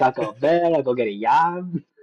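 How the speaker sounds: put-on Spanish sound. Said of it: "make it sound Spanish".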